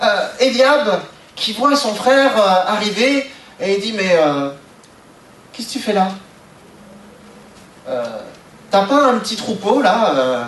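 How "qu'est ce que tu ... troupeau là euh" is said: put-on disdainful, contemptuous, scornful tone. Retelling a man's words on seeing his brother arrive, acting out a contemptuous tone. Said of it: "ce ton méprisant".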